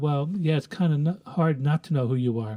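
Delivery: sheepish, embarrassed-sounding tone. Retelling a worker's reply to an arrogant man: imitating a sheepish reply. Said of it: "he sheepishly responded".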